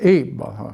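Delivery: strong stress on "eat", following word falls away.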